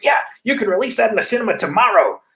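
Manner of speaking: excited, high gushing. Retelling how Quentin Tarantino reacts to uncovered Aussie films: excited Quentin Tarantino impression. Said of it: "in that way that Quentin does".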